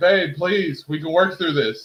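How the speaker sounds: acted, high-pitched, begging, pleading tone. Retelling an argument with a wife, imitating own begging plea. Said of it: "I'm begging and pleading here".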